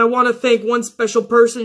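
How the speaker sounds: ordinary talk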